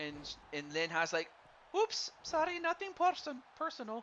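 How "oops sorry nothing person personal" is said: failed put-on Vietnamese accent, very high pitch. Voicing a woman he is talking about, attempting a vietnamese accent. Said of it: "I'm trying to do the Vietnamese accent".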